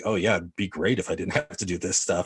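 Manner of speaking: put-on flat, deadpan, sarcastic delivery. Retelling how a film character challenged her husband: imitating a sarcastic remark. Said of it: "challenged him by almost being sarcastic".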